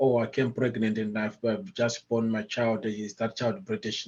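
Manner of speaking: ordinary talk, nothing marked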